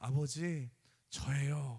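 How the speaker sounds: put-on deeply moved voice. Retelling a son calling his father from abroad: imitating a deeply moved voice. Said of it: "너무 감격해서".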